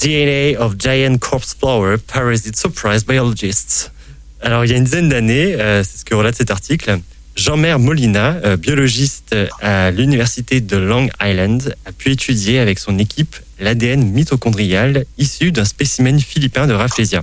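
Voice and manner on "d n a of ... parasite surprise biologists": slow, careful English accent. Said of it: "accent anglais en préparation".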